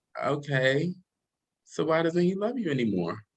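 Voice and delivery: imitated gentle, soft tone. Retelling a phone call with mother: imitating mother's soft-spoken tone. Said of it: "she has a very soft-spoken tone".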